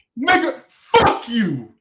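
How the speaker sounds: very high, very loud, shrill fake fury. Naming a favorite movie pick, then turning on the listener: mock-angry. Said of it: "Why are you so mad?".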